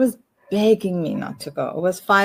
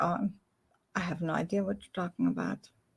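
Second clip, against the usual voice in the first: put-on ice-cold, emotionless tone; 12 dB quieter than usual. Retelling a father denying everything: imitating an ice-cold denial. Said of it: "ice cold".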